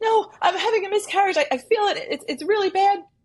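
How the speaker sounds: play-acted, pitched way up, sobbing in hysterics. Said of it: "she's hysterical crying".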